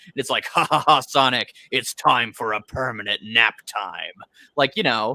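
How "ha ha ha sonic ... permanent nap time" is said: very deep voice-modulator sound. Imagining a better joke for the show: baby Robotnik super deep voice. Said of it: "super deep voice modulator it created".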